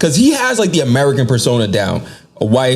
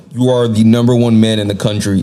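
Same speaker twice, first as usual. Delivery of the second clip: plain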